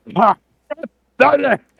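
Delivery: boisterous bellow, very loud and high. Game master voicing a character calling out as he leaves a tent, loud, boisterous yell. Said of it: "He yells as he leaves a tent".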